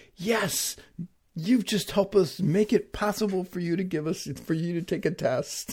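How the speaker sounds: sarcastic, mock tone. Retelling a joke told to kids after a test setup worked: imitating own sarcastic remark. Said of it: "they got the sarcasm".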